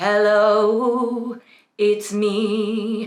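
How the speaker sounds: resonant chest-register voice, "me" drawn out. Demonstrating the chest register while explaining vocal registers: chest voice. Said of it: "So that's chest voice".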